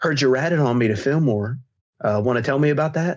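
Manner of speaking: imitated menacing, taunting tone. Speaker retells a woman confronting him about ratting on her, retelling a menacing taunt. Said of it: "Like a very like evil smile".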